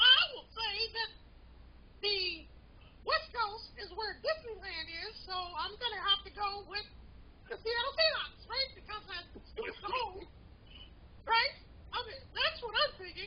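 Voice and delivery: high-pitched cartoon mouse character voice. Answering who wins the Super Bowl in a voice battle: Mickey Mouse voice. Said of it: "I give you Mickey Mouse".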